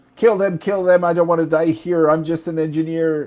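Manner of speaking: frantic, panicked, terrified pleading voice. Narrating a game scene, voice a self-described engineer screaming in terror. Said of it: "is now screaming in terror".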